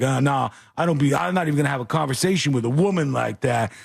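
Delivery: put-on dismissive, angry brush-off tone. Retelling how a message sounds: imitating an angry boyfriend. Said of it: "an angry boyfriend".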